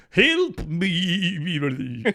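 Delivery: put-on horse voice in New Zealand accent, drawn-out me. Demonstrating a voice for the group: New Zealand horse accent. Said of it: "New Zealand horse accent".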